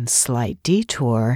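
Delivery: confiding, close, low murmur. In a cab, Nate answers Annie's remark about a missed turn, murmuring in her ear. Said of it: "he murmured in her ear".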